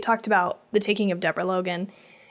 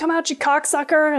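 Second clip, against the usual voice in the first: raised, high yelling; 7 semitones higher than usual. Recounting a funny scene, the speaker acts out the mayor: imitating the mayor yelling. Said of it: "the mayor was like yelling".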